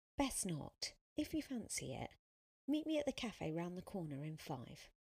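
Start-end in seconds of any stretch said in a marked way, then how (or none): none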